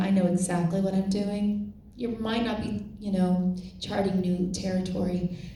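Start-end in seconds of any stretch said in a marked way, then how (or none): none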